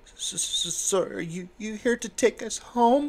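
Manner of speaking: trembling voice. Narrator voicing a girl who comes over to the group, in a shaking voice. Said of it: "in a shaking voice".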